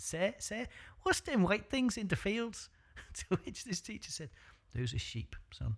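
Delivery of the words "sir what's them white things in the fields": put-on high-pitched little child's voice with Scouse accent. Retelling a child asking a teacher a question, in a child's Scouse accent. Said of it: "I'm doing my best at a child's Scouse accent".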